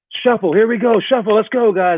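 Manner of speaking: charismatic energetic calls. Showing leaders how to call drills fast: fast and charismatic. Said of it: "like that".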